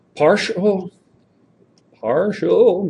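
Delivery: voice cracking up high on the word "partial". Walking listeners through a partial fraction exercise, voice cracking. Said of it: "my voice cracked".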